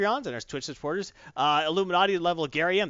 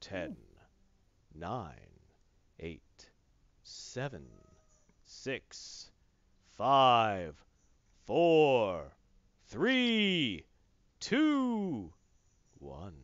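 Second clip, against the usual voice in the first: mock announcer delivery; 8 semitones lower, 6 dB quieter than usual. Giving Cypher ten seconds and counting down: announcer voice countdown. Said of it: "I'm going to use my announcer voice".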